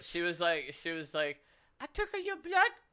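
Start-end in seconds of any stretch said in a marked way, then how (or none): 1.8-2.7 mock thick Japanese accent, higher. Retelling what the woman who took blood said: imitating a thick Japanese accent. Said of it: "what did her accent sound like".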